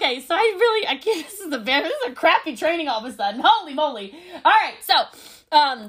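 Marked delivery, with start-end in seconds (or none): 0.0-4.1 tearful, crying through the words. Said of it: "I'm crying on a call with you".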